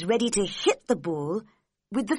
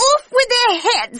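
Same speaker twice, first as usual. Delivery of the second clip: furious, very high, very loud, shrill angry shriek; 9 dB louder than usual. The narrator reads the queen's words as her face turns red: angry shout. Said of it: "she shouted".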